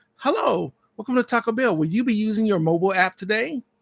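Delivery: smooth, chipper, automated AI voice. Imitating the drive-thru intercom greeting, Taco Bell AI voice impression. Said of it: "That's an A I voice".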